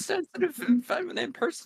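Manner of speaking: poor, high-pitched frog puppet character voice. Quoting what a man said about himself, slip into a bad Kermit the Frog impression. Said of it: "That's a really bad fucking Kermit the Frog impression".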